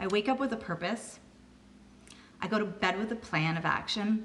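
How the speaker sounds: choked-up, emotional voice catching. Describing what this opportunity has meant to her, getting all choked up. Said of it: "I'm getting all choked up saying this".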